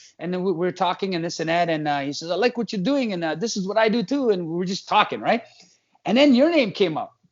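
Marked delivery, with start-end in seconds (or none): 2.3-4.3 put-on thick European accent, laid on heavily, pitched up. Retelling what another man said in a past chat, imitating his heavy accent. thick accent, put on. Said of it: "he spoke with a really thick accent".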